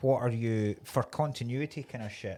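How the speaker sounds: plain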